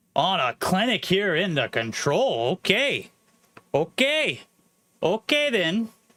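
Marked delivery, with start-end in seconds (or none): 2.6-5.9 bad put-on Canadian accent, pitched up. Match commentator breaking off between plays for an attempted canadian accent. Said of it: "That's my best Canadian accent".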